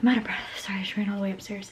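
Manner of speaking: panting, out-of-breath whisper.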